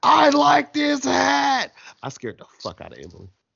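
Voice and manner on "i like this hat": mock very high, stretched-out, raspy, rough scream. Retelling own reaction to a surprise appearance: imitating own scream. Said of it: "I screamed out".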